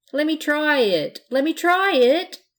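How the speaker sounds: eager, insistent, high, loud begging. The pirate, pulling at Blanche's dress, begging. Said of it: "begged the pirate".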